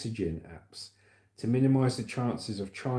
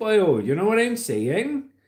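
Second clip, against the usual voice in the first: stretched-out Welsh accent, very high and loud; 9 semitones higher, 8 dB louder than usual. Demonstrating how people with Welsh heritage talk, Welsh accent with elongated words. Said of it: "all the Welsh talk a bit like this".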